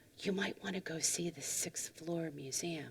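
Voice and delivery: hushed, very quiet. Retelling what the desk clerk said, leaning close: imitating a lowered voice. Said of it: "and lowered his voice".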